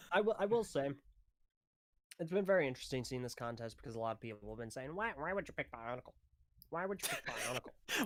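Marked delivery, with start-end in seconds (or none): 4.9-8.1 sneering, mocking, quacky put-on duck voice. Retelling what a lot of people have been saying, in a duck voice. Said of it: "Stop doing the duck voice".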